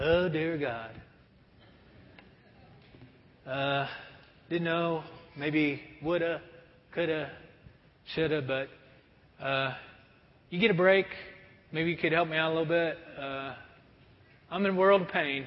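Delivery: weak, soft, wimpy, half-hearted delivery. Mocking a half-hearted prayer that god hates: mock wimpy prayer. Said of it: "those little wimpy prayers".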